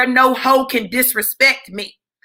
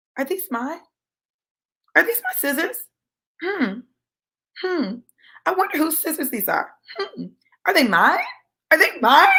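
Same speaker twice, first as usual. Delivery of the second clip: put-on calm, crazy voice; 4 semitones higher than usual. Speaker recounting asking a man with a cane about scissors, retelling a calm, crazy voice. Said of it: "I had that calm, crazy voice".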